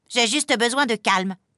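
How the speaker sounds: angry, irritated snapping tone. Monsieur Lapin retorts to Madame Ours: angry retort. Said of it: "rétorque Monsieur Lapin en pétard".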